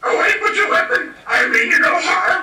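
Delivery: little gremlin character voice. Playing Yoda in a shop skit, startled by a phone held up: Yoda voice. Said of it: "Excuse me, Mister Yoda".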